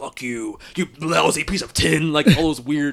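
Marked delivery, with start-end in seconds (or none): 0.0-2.1 slow, furious, angry outburst. Describing a movie scene, quoting lines: imitating angry Optimus Prime.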